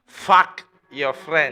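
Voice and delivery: put-on very loud yell in a clear Mexican accent. Quoting their dad during an argument about chores, in a Mexican accent. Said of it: "in his clear Mexican Mexican accent".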